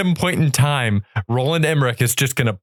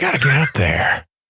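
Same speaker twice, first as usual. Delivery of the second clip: put-on voice of an old politician. Imagining Joe Biden flying a plane: Joe Biden impression. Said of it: "That's my best Biden".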